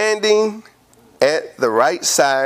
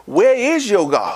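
put-on mocking tone, higher; 6 semitones higher than usual. Retelling how Elijah taunted the prophets of Baal: imitating Elijah mocking. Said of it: "Elijah was mocking".

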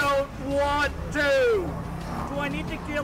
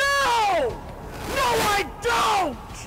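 high-pitched scream with swooping pitch; 8 semitones higher than usual. Answering someone who keeps asking for money and is not leaving, screaming. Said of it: "why are you screaming at me".

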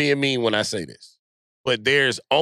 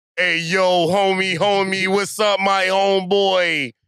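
put-on slangy street voice, pitched up; 7 semitones higher, 4 dB louder than usual.

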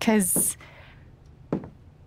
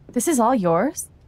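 surprised, pitch rising at the end. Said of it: "Don't sound so surprised".

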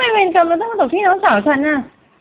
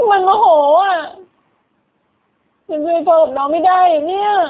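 speaking while crying, in tears. In a scene where a friend tells her not to cry, crying. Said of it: "แกอย่าร้องดิวะแกอย่าร้องไห้ดิ".

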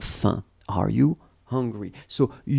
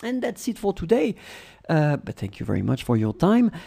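usual speaking voice

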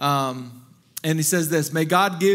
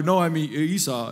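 put-on frightened, scared, faltering, stumbling voice. Retelling Jacob answering his blind father Isaac: acting out a scared reply. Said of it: "he's scared".

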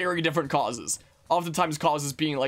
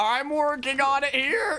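voice cracking and breaking, higher; 11 semitones higher than usual. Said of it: "A random voice crack".

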